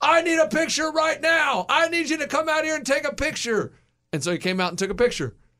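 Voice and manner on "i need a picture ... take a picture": play-acted, very high, barging-in yell. Retelling walking into a building of traffic people: imitating own past yelling. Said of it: "and I just yelling".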